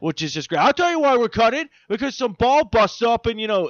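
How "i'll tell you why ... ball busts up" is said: loud, higher-pitched put-on New York accent. Retelling a scene where two actors answer about the cutting: put-on new york accent. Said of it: "throwing on their best New York accents".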